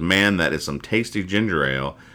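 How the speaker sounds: normal talking voice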